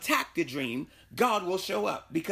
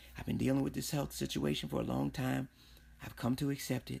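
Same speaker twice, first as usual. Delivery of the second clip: hushed, whispering voice; 6 semitones lower, 8 dB quieter than usual. Confiding in the listener after saying he will whisper it, whisper. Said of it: "I'm going to whisper this to you".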